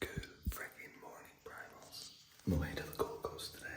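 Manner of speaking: very soft, hushed whisper, barely audible. Greeting viewers while someone nearby is still asleep, whispering. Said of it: "I have to whisper".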